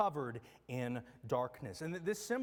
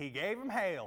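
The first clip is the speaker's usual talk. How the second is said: put-on Southern accent. Quoting a professor's line about the plague of hail, in his best Southern accent. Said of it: "in his best Southern accent".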